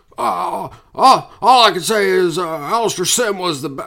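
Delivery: high, slow, hesitant, stumbling delivery full of fillers. Reading out a listener's comment, slipping into a Jimmy Stewart voice. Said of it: "I'm doing Jimmy Stewart again".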